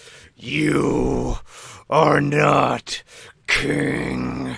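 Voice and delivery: very slow, rough, ground out through clenched teeth. The narrator speaks a character's line as the player pulls his helmet off, through gritted teeth. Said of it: "he says through gritted teeth".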